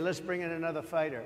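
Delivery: ordinary delivery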